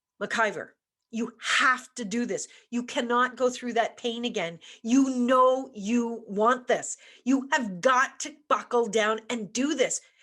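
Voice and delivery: mock firm, stern, scolding tone. Recalling trying to make oneself study, retelling a stern self-talk. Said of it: "that was a really light voice".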